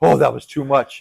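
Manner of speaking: ordinary talk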